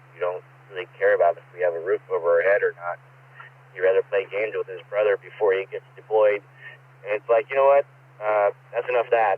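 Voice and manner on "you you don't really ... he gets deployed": ordinary talk, nothing marked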